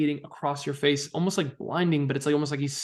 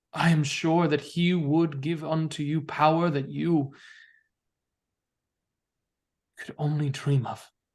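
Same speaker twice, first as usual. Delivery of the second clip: powerful, thunderous, booming voice. A storyteller voices a being heard through the whole chamber, powerful and booming. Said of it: "a gust of powerful booming voice that shakes the whole chamber".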